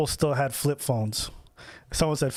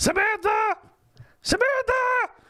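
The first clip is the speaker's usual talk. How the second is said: put-on shrill, piercing, very high girl's voice calling out; 3 dB louder than usual. Recalling going to clubs, the speaker is imitating a piercing girl's scream. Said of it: "a girl's voice was so piercing".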